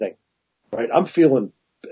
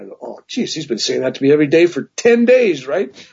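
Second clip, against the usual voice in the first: plain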